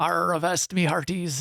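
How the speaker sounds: playful stock pirate voice, played for fun. Talking about pirate jokes, showing off a ready pirate voice. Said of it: "I've got my pirate voice ready".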